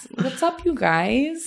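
trying-too-hard casual cool. Showing how one might overshoot to fit in with students: trying to sound super cool. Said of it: "So I'm just going to start talking to them like this".

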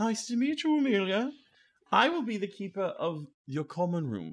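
grand owl voice. Voicing a great owl waking up and calling out: great owl voice. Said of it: "You walk forward".

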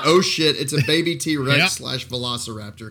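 ordinary delivery

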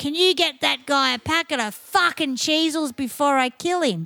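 talking loudly. The speaker retells an old man's comeback at the bar during a gig, retelling loud speech. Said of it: "said louder than anyone".

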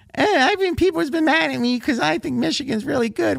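very high, wheedling, whiny tone. Teasing the person who sent a show prep email, read back its complaint as a whiny imitation. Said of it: "I could even hear the whine in your voice".

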